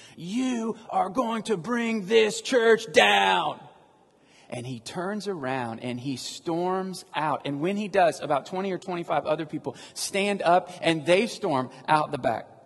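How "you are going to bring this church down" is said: play-acted, shrill, high screamed outburst. Retelling a church service, the speaker acts out a man screaming at the pastor. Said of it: "he starts screaming".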